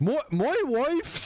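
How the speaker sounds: put-on very high, squeaky, poorly done British accent. Joking about how a British Borat would sound: British Borat voice. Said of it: "British Borat be like".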